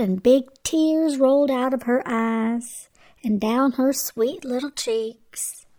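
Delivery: plain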